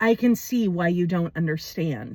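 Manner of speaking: even, composed, calm, clear and low voice. Quoting his answer after you said you didn't understand, retelling a calm, clear reply. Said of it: "he says with such calm clarity in his voice".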